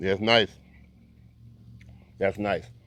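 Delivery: mouth full while talking. Tasting lo mein and shrimp, talking with food in mouth. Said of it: "Sorry for eating with talking with food in my mouth".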